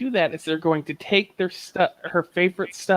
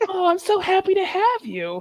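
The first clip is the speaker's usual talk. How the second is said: put-on super sweet elephant queen voice, higher pitched; 14 semitones higher than usual. Describing a game's castle scene, imitating a super nice elephant queen. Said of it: "this super nice elephant queen who's like".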